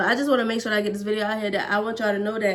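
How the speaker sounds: hurried, quick speech.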